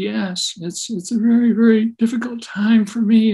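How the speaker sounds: high, slow, trembling, quavering voice. Retelling talking to a sad, frightened lady, imitating a shaking voice. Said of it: "her voice was shaking".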